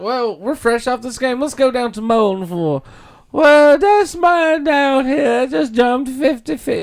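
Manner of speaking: terrible, very high put-on woman's voice. Recalling a kids' competition show, doing a terrible impression of a woman. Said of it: "That's a terrible impression of her".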